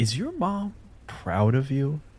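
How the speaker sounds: soft, swooping, cutting sincere tone. A player asks the villain a question meant to hurt them: cutting sincerity. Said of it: "but with a sincerity that I hope will cut".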